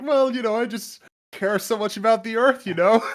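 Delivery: very high, loud, smug, self-satisfied preening voice. Retelling a cartoon scene about hybrid car owners: imitating smug talk. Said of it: "they were becoming so smug".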